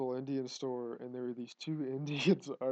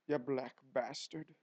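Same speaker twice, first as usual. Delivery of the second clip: imitated Irish accent. Retelling words overheard in a store argument: imitating an irish accent. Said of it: "in, like, an Irish accent".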